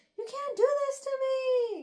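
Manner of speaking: very high, desperate, panicked screaming. Retelling a character's reaction, imitating someone screaming. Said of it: "she just starts screaming".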